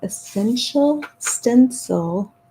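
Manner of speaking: deliberate, slow, careful word-by-word enunciation. Explaining a stencil company's recommendation, said slowly. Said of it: "I have to say that slowly".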